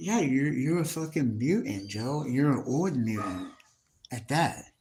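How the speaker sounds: ordinary talk, nothing marked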